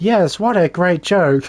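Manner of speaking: slow, mechanical robot voice. Retelling how a character got voiced over: imitating a robot voice. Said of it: "robot voice".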